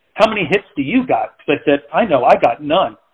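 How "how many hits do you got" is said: playful, joking, teasing tone. Recounting teasing someone about being a one-hit wonder; retelling a joking tease. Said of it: "jokingly, teasing".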